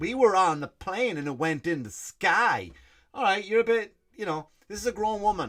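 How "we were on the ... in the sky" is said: slow, toddler-simple, dumbed-down mock accent. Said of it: "the accent doesn't work for you".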